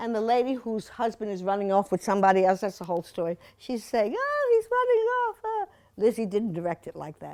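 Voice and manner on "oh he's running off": very high, insipid, simpering lady's voice. Describing a movie, quoting the lady whose husband runs off, The Women movie voice. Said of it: "they talk like this".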